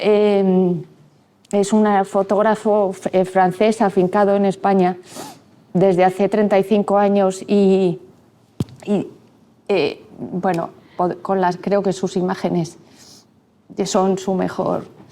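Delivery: halting, choked-up voice with drawn-out eh. Paying tribute to a photographer who died yesterday, voice choked with emotion. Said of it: "es que me, me he emocionado".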